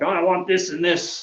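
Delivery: high mild mock yell. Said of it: "if you come to me screaming like".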